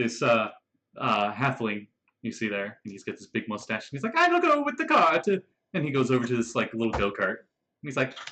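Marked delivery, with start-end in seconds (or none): 4.1-5.3 put-on Italian accent, higher and louder. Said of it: "all halflings in, in Retroverse have to have an Italian accent".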